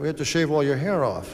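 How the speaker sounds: ordinary talk, nothing marked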